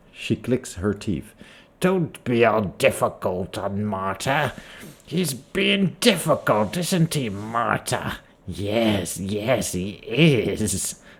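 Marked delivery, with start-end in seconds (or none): 1.8-11.0 put-on witch character voice. The game master voices a woman picking at corpses, talking to the players: witch character voice. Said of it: "she's been called a witch, / You see a blockish woman dressed in a heavy burlap robe. She lumbers about the room, her joints popping as she bends over to pick up objects from various tables. Her hair".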